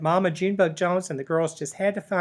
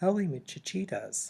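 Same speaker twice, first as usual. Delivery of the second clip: very soft, hushed little voice; 8 dB quieter than usual. Reading a story, Skippy John answers as everyone cries his name: mooey mooey soft voice. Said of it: "he said in a mooey mooey soft voice".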